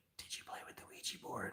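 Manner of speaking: very quiet, hushed whisper. Telling a story, repeating what a girl whispered in their ear, retelling her whisper. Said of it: "like whispers in my ear".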